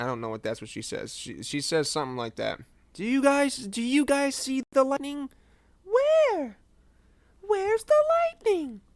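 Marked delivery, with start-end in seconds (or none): 2.9-8.7 very high, animated, widely swooping cartoon character voice. Doing an impression of Dora asking about the lightning: imitating Dora. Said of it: "That's exactly what she sounds like".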